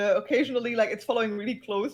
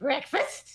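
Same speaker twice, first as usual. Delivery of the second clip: voice of a small goblin-like creature; 4 semitones higher than usual. Voicing a kobold waiter popping up at the table: kobold voice. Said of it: "one head poking over the side of the table, going".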